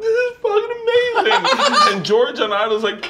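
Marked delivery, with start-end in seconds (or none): 0.0-1.9 very high, drawn-out, tearful crying voice. Retelling a reaction to an episode on TV: imitating Leanne crying. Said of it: "Leanne's crying, going like".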